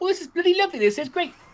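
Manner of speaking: put-on very high, squeaky Gloucestershire accent. Imitating a bearded Victorian sportsman, in a high squeaky Gloucester voice. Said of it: "had a high squeaky Gloucester voice".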